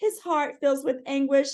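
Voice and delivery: ordinary talk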